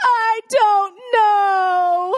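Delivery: tearful, high, loud sobbing cry, know drawn out. Retelling a child's reply after being asked why she lied: imitating Avery sobbing. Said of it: "And she starts sobbing".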